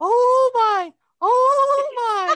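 scared pleading, very high and very slow. Retelling grandma going up a roller coaster: imitating grandma's frightened praying. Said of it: "Praying that she doesn't die".

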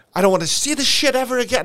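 play-acted very high, upset outburst. Retelling a man who smacked his palm: imitating someone upset. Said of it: "He was so upset".

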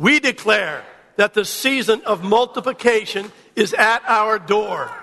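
loud declaring voice. Leading a congregation in spoken declarations: loud outdoor voice. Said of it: "outdoor voice".

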